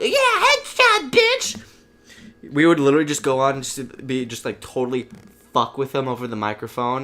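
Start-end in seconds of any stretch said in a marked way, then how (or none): 0.0-1.6 put-on very high, loud child's shriek. Retelling a player over the game microphone, imitating someone screaming. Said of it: "screaming at the top of the lung".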